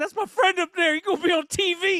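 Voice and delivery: mock very high-pitched, tearful, choked-up voice. Retelling watching a friend's comedy special: imitating being teary-eyed. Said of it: "I got teary-eyed a little bit".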